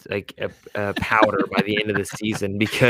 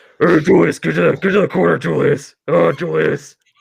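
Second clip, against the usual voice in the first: raspy chain-smoker voice, pitched up; 7 semitones higher, 4 dB louder than usual. Asked what Thibs sounds like, call to Julius in a Thibs voice, like chain-smoking Batman. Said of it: "Think about Batman, but he smokes a carton a day".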